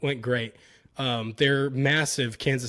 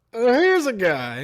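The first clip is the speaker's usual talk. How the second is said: loud, high commentator voice; 9 semitones higher, 6 dB louder than usual. Doing a requested impression of a football announcer: Chris Collinsworth impression. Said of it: "Do a Chris Collins impression".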